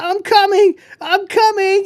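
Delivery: very high, shrill, drawn-out scream. Retelling a movie scene where a character screams to her dad: imitating a scream. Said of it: "and she screams".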